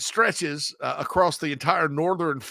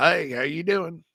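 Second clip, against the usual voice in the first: put-on Oklahoma accent impression. Discussing Southern states, the speaker shows how Oklahoma people talk, imitating an Oklahoma accent. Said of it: "Oklahoma people talk like this".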